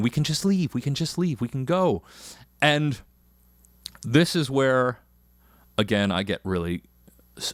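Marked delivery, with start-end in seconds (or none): none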